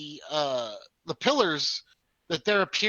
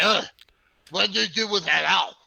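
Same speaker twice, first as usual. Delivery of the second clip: put-on big fat man character voice; 3 semitones higher, 4 dB louder than usual. Voicing a big fat guy floating up in an armchair: voicing a big fat guy. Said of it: "And he's like".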